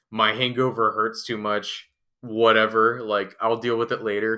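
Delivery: ordinary talk, nothing marked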